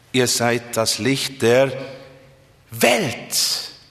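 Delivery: weight and stress on the word Welt. Reading the line with a different emphasis, stress on welt. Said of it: "Warum diese Betonung Erde, Welt?".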